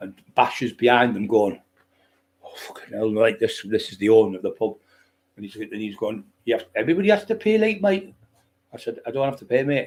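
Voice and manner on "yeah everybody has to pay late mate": very high Newcastle Geordie voice. Retelling what the pub owner said at the door, in a Geordie accent. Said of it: "Geordie accent".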